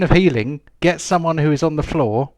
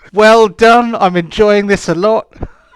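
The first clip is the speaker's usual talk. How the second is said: high, loud mock gushing praise. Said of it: "it's like".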